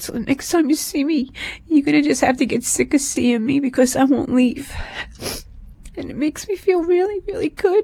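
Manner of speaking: sobbing while speaking. Speaking directly to someone they once left, hysterically crying. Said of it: "even though I'm hysterical crying".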